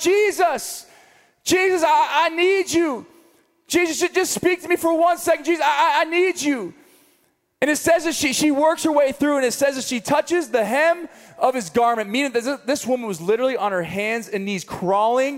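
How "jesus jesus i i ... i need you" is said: put-on high, drawn-out yell. Picturing a woman pushing through a crowd toward Jesus: imitating a woman yelling over crowds. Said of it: "yelling above the crowds".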